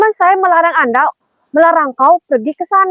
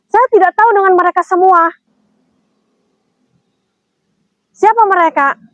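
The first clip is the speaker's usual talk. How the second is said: angry, heated tone; 2 semitones higher than usual. Pressed to answer the third question, repeating the answer angrily. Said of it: "jangan marah-marah".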